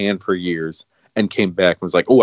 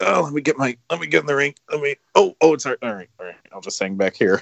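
put-on old man voice, much higher; 6 semitones higher than usual. Describing a tag match, the speaker mimics Vader as a lazy old dad. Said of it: "he's like an old man dad".

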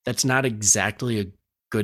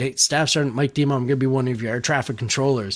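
usual speaking voice

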